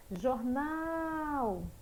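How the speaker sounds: called out, "nal" in jornal stressed and stretched. Teacher calls out jornal as if calling a person, stretching nal. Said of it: "chame como se você estivesse chamando uma pessoa ... Onde foi que se demorou mais? ... No nau".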